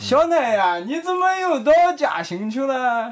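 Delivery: Shandong dialect, pitched very high. Imitating a parent asking why they went to Jiaxing again: Shandong dialect. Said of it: "你这山东话".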